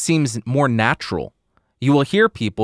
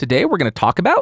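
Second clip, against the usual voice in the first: exaggerated, overdone upspeak rising on about; 6 semitones higher than usual. Giving a deliberately exaggerated upspeak example: exaggerated upspeak rise on about. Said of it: "that's a really bad, a really exaggerated example".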